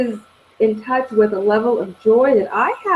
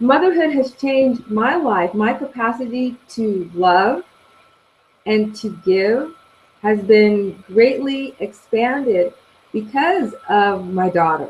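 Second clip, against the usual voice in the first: on the verge of crying, choked-up, teary. Talking about motherhood with another speaker, on the verge of crying. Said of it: "and I'm gonna start crying".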